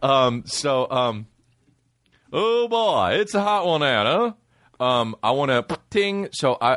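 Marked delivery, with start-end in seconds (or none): 2.3-4.8 put-on southern politician voice, pitched higher. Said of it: "Why is he Southern when you do it?".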